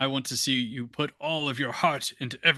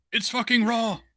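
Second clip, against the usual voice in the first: bad Australian accent, very high-pitched; 11 semitones higher than usual. Ad-libbing after the Gordon Ramsay's Super Cooks bit, in a bad Australian Gordon Ramsay impression. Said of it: "my bad Australian Gordon Ramsay".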